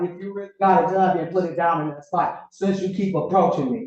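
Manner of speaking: plain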